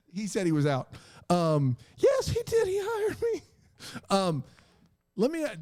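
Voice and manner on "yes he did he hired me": very high, swooping, sing-song put-on voice. Acting out what someone said, in a very high-pitched put-on voice. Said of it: "he has a very high pitched voice".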